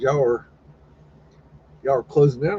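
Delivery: ordinary talk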